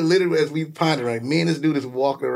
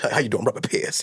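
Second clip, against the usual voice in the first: put-on old man voice, put on. Describing how an old NBA player talks: Robert Parrish impression. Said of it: "that's how he talk".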